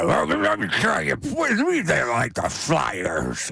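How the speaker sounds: slow, drawn-out caveman voice swooping up and down. Retelling how Mark Madden sounded on air: imitating Mark Madden, caveman-like. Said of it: "the way Madden sounded to start that".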